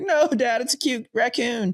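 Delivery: high, tearful crying voice. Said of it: "she freaks out crying".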